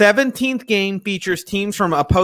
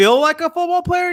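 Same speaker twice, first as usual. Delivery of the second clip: high-pitched mocking voice. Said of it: "I'm like".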